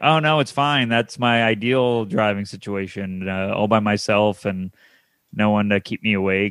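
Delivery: sincere, earnest tone, as if genuine. Retelling what Peter said about driving up alone: imitating Peter's sincere delivery. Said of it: "That sounded sincere at first".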